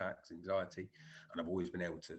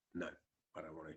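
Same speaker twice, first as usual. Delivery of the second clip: soft, expressionless, deadpan delivery; 2 semitones lower, 6 dB quieter than usual. Describing a woman who won't talk, imitating her deadpan reply. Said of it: "sometimes she's just deadpan".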